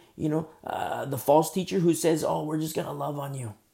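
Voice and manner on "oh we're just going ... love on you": ordinary talk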